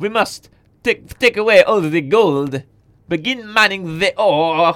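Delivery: put-on blend of French and German accent. Act out the commander of the big mammoths giving orders, in a Lord Nooth French-German accent. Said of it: "doing his best French-German accent".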